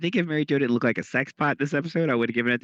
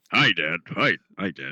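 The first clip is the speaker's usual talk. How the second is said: slow, deliberate, drawn-out voice; 6 semitones lower than usual.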